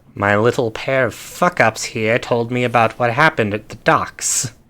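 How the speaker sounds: put-on voice with slight Italian accent. Game master voicing Kindly Cheng as the players approach: Kindly Cheng, a little Italian. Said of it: "Going a little Italian".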